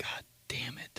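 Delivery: barely audible whispered grumble, muttered under the breath. Retelling a reaction when dad quizzed him: imitating muttering under breath. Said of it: "under my breath".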